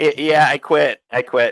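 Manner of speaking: slow, drawn-out, loud, weaselly voice. Retelling a movie scene where a character quits by phone: Jonah Hill voice. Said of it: "I love your Jonah Hill voice".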